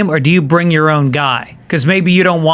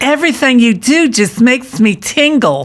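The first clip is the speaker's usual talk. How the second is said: put-on flamboyant camp voice, higher; 7 semitones higher than usual. Playing an interpreter greeting the President of France: put-on flamboyant interpreter voice. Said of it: "Trump should hire flaming homosexuals".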